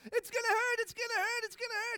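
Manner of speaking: put-on shrill, very loud, very high panicked child's scream. A father retells his daughter Hadley panicking over a splinter: imitating Hadley screaming. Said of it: "she's panicking and she's screaming".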